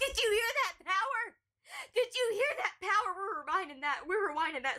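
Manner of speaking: voice cracking and breaking upward mid-line. Reacting to a clip as it is rewound: voice cracking. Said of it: "my voice cracked there".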